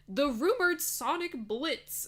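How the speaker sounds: voice cracking and breaking up high. Talking about rumored game news to viewers, voice cracking. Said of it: "My voice cracked".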